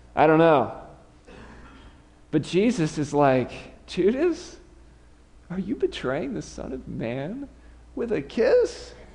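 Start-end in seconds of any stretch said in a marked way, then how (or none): 3.8-8.9 high-pitched, put-on tone of sheer disbelief. Acting out a quoted question in a retold scene: imitating incredulous surprise.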